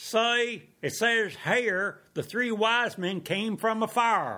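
high, put-on Southern lady's accent. Telling a joke, the speaker quotes Miss Bobo to the New Yorker in a Southern accent. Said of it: "with her Southern accent said".

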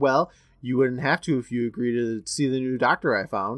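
ordinary delivery

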